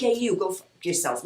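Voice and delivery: rough-edged East Coast accent. Showing how they sound as a woman with an East Coast accent: rough East Coast voice. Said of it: "I know I sound rough".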